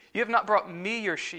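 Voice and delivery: strong stress on ME.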